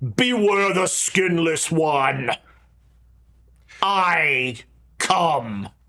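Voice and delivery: impossibly deep voice, dropped as low as it goes. Retelling what a strange figure said to them, the speaker uses an impossibly deep voice. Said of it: "in an impossibly deep voice says".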